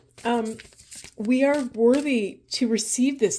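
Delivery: sobbing, ugly crying through the words. Speaker breaking down mid-speech, ugly crying. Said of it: "I'm ugly crying".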